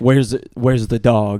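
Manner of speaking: put-on angry shouting. Retelling the scene where the character storms in: Superman angry voice. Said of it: "When he storms in and he's like".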